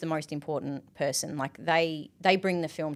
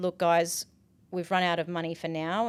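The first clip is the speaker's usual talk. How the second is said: normal talking voice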